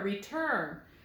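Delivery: return with the second syllable, turn, stressed. Accent moved to the second syllable: stress on TURN of return. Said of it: "So the accent is on the turn".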